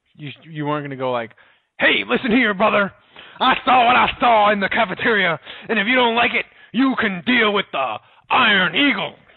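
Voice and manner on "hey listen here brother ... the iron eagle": very high-pitched pro wrestler promo voice. Speaker acts out a retort he could not have given: Hulkamania voice. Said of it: "I tried to do my Hulkamania voice".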